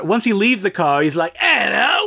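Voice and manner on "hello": put-on, hoity-toity British accent, pitched up. Retelling the character's greeting after his accent changes: British accent. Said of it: "His accent completely changes".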